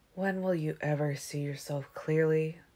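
spoken quietly. The narrator reads a man's question to the narrator, said softly. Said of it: "he said softly".

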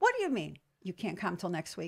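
normal talking voice

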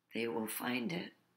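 weak voice. A man moves his hand to where the pearl is hidden and answers, weakly. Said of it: "he said weakly".

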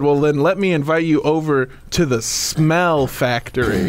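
usual speaking voice

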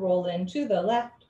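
ordinary talk

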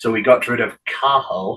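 ordinary talk

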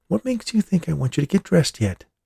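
light, playful teasing, pitched high. Claire, asked by the narrator to bring his pants, answers him teasingly. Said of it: "she asked teasingly".

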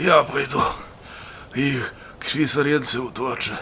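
feeble, faint, weak, soft voice. The bolshevik appears from around the corner and announces in a weak voice. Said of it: "oznajmił słabym głosem".

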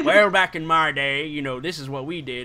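put-on gruff country riverboat accent, jutting underbite. Showing the others how the riverboat accent sounds: gruff country riverboat accent. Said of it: "the underbite".

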